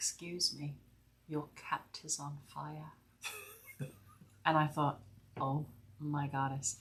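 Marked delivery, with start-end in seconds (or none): 0.0-2.9 put-on small, soft, sweet, cute English accent. Retelling how someone interrupted the group's meditation, in a cute little English voice. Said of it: "in this cute little English voice".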